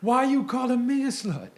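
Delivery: high, loud belted yell.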